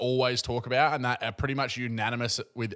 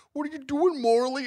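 put-on voice, pitched very high; 4 dB louder than usual. Retelling a stand-up bit done as an impression: Owen Wilson impression. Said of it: "does the Owen Wilson impression".

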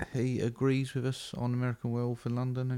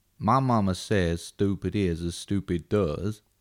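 put-on Southern voice, much lower; 4 semitones lower, 5 dB louder than usual. Acting out a meeting between two movie characters, in a Forrest Gump impression. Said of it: "when Forrest Gump met Tommy DeVito".

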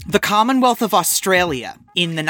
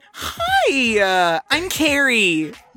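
fake polite, high, sing-song, "hi" drawn out; 5 semitones higher than usual. Imitating the other speaker after being asked: fake first-meeting voice. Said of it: "your fake "I just met you" voice".

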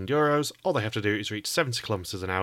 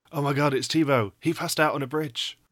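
higher-pitched whispering; 6 semitones higher, 3 dB louder than usual. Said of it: "sort of whispering to you".

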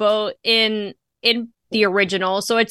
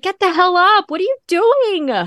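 acted, very high, shrill screaming; 9 semitones higher, 4 dB louder than usual. Speaker recalls watching old horror movies: retelling screaming at the TV. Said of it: "I'm screaming at the TV".

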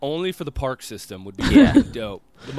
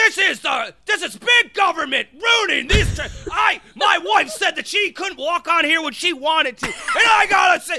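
mock screaming, much higher; 4 dB louder than usual. Retelling a man screaming at a nerdy teenage lifeguard, Alex Jones mock screaming rant. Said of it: "Screaming at this 17-year-old nerd".

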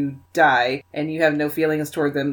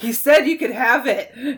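put-on high-pitched, very drunk-sounding delivery; 7 semitones higher than usual. Retelling a favorite scene, the speaker acts out a character's line: imitating a drunk delivery. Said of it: "he just says it like so drunk".

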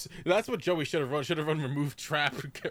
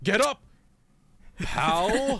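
put-on strained voice, higher and louder; 5 semitones higher, 5 dB louder than usual. Retelling how Yugi forces out a line: imitating Yugi straining out words. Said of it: "he had to strain out getting the word".

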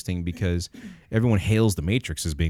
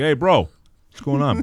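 put-on mouth-full voice, higher and louder; 6 semitones higher, 4 dB louder than usual. Doing an impression asked for by another speaker: Brad Pitt impression. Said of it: "I wanna hear the Brad Pitt again".

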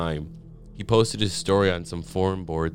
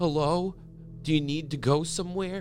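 frightened, scared, very high-pitched voice; 9 semitones higher, 3 dB quieter than usual. Narrator voicing Jared speaking to a person in the back of his car, scared. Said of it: "In a scared voice".

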